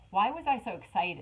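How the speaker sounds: usual speaking voice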